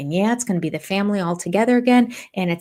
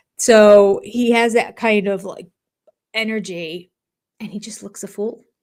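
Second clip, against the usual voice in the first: ordinary talk, nothing marked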